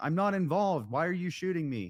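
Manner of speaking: shouting hard, loud and high-pitched. Retelling driving past an officer who had fired at them: imitating own shouting. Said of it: "I was shouting".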